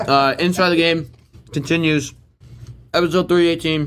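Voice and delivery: talking while chewing. Podcast host opening an episode while eating Chex Mix, talking while chewing. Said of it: "chewing a little bit".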